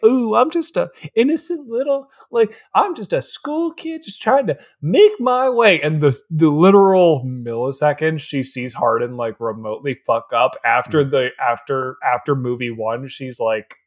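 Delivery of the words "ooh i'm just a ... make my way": acted sweet, coy, innocent voice, pitched up. Retelling how Tessa plays coy: imitating Tessa playing coy. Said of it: "she plays, like, coy".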